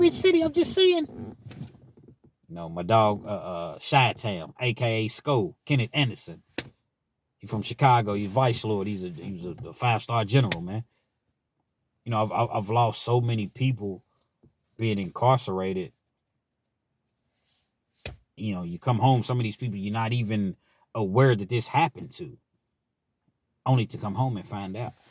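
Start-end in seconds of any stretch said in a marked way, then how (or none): 0.0-1.3 put-on very high, loud Richmond, Kentucky accent. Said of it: "That's how they talk in Richmond, Kentucky".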